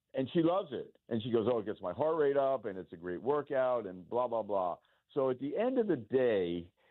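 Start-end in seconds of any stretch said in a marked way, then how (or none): none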